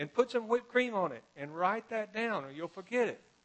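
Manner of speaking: very loud, shrill, high holler. Storyteller retells a woman calling out to a man heading to the kitchen, retelling a holler. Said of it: "she hollers out".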